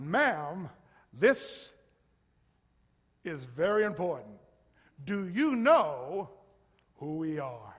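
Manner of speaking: booming put-on broadcaster's announcer voice. Speaker retelling a joking companion talking to the lady behind the counter, announcer voice. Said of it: "he had this, like, announcer voice".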